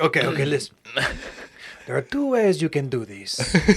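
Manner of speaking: clumsy put-on French accent, smooth persuasive tone. Imagining how Claudia talks to a man, imitating Claudia in a bad French accent. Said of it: "but it came out as French".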